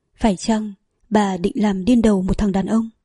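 ordinary talk

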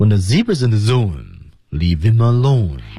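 rhythmic linked reading, "let alone" falling. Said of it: "我们要看一下它的节奏啊".

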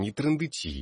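irritated. A character cuts off a talkative companion in a story read aloud, wincing with irritation. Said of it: "поморщился Ботлер".

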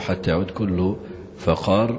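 plain

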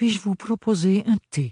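sweet, gentle voice. A mother speaks to the golden lady, in her softest voice. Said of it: "dit maman de sa voix la plus douce".

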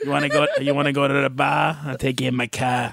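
put-on Boston accent. Joking with co-hosts, doing a boston accent impression. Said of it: "That's my Boston impression".

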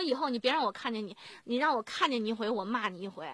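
ordinary talk, nothing marked

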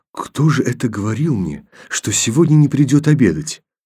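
whispering. At the table Kolya leans across to Tanya, whispering. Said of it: "произнес шепотом".

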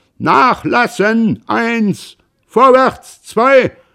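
full-lung bellowing, very high pitch and loud. A narrator reads rowing commands called out in a story: shouting at full lung. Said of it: "aus voller Lunge".

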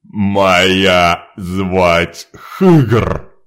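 loud growling monster voice, Моя drawn out. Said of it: "прорычало чудовище".

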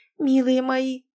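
trembling, shaky, quivering whisper. Reading a woman's words as she hugs the men, trembling whisper. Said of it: "дрожащим голосом зашептала она".

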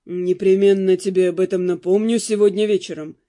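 with a smirk. The narrator reads the count's reply to his wife, with a smirk. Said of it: "усмехнулся граф".

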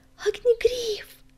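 delighted, joyful cry pitched way up. A she-cat looks up and sees him on the fence, joyful exclamation. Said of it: "она радостно воскликнула".

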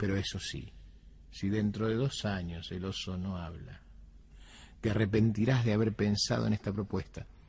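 ordinary delivery, nothing marked

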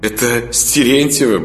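contemptuous snorting retort. Putyata answers Sanya's question about another man; contemptuous snort. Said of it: "презрительно фыркнула путята".

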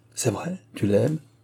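ordinary delivery

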